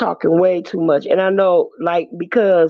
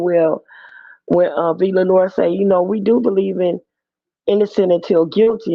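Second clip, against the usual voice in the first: ordinary talk, nothing marked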